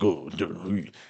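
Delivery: quiet, harsh, gruff man's voice. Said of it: "he was all gruff in his voice".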